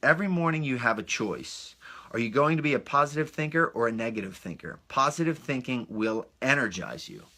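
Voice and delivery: ordinary delivery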